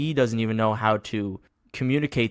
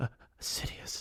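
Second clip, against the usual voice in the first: put-on fearful stuttering villain voice, quieter. Retelling an episode scene, imitating Maul with put-on fearful stutters. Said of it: "these fearful, like, breaths".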